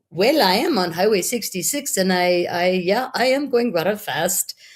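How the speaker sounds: put-on English with a Spanish accent. Retelling a phone call with a speeding driver, imitating him in a Spanish accent. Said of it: "with his Spanish accent".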